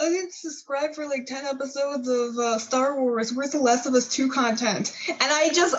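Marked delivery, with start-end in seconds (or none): 0.0-4.9 deliberately dopey, really dumb-sounding put-on voice. Retelling a joke Cooper made on the show: Cooper's dumb voice. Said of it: "He did a really dumb voice".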